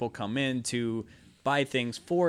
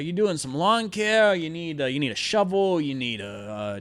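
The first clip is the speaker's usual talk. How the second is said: rough, gruff tone of voice; 3 semitones higher than usual. Retelling a man who slams his hand on the counter, in a gruff voice. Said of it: "gruff voice".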